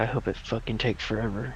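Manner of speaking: quiet muttering. As Natalia gets out, [name] mutters under his breath. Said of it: "under his breath".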